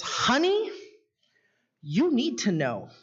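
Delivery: sassy, know-better tone with plenty of sass. Retelling what a lady at class registration told them: imitating a sassy tone. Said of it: "just kinda with the sass".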